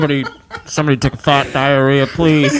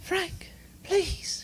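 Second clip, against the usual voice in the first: whispered forties-film style British lady voice; 17 dB quieter than usual. Showing co-hosts the woman's voice planned for the bit, in a British woman's voice. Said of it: "she's always British".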